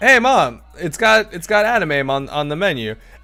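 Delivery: put-on excited child's voice, high, loud and eager.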